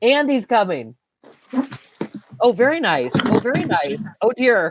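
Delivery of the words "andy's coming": half-hearted calling out. Trying the warning call on the spot after being asked: yelling. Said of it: "I have to try me yelling it".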